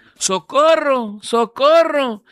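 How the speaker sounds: put-on old lady's voice, high shout. Speaker recounts an elderly hotel lady who started yelling, retelling a shout for help. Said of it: "y empieza a gritar".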